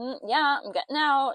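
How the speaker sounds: mock fed-up tone. Retelling an iconic scene, quoting Molly's reply, imitating Molly's fed-up tone. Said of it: "just the tone in her voice. She's just so done".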